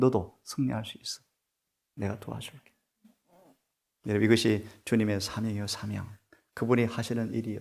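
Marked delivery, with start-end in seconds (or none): 0.0-2.7 soft, confiding whispered murmur, close to the ear. Acting out Jesus whispering encouragement into an ear: acting out a whisper. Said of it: "귀에 소곤되셨죠?".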